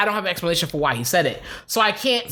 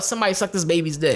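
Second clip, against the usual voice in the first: ordinary talk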